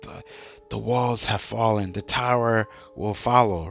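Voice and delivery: put-on muttering under the breath. Retelling a poisoned character's dying words: imitating someone muttering under breath. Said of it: "mutter these words under his breath".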